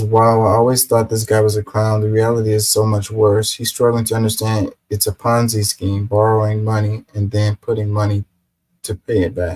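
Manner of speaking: ordinary delivery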